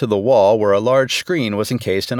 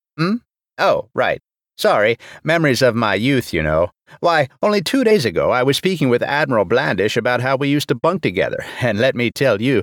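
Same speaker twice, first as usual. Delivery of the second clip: ordinary delivery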